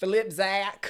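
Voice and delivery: Southern twang and drawl, high-pitched and loud.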